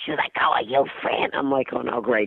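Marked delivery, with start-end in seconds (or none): 0.4-1.3 put-on mobster voice, pitched lower. Retelling an eighty-year-old lady greeting the comic, imitating a mobster voice. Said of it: "She sounded like she was in the mob".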